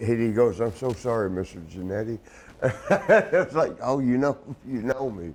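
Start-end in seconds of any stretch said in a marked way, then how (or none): 0.6-2.2 put-on nervous, apologetic man's voice, quieter. Retelling how a man who knocked a drink over apologized to him, imitating JJ's nervous apology. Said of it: "And he was so nervous".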